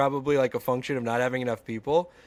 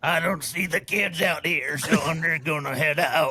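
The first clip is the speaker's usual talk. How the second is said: put-on silly, raspy voice; 2 semitones higher than usual. Imitating the movie's sheriff after others praise his silly voice: silly sheriff voice, like RFK. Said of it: "Silly voice".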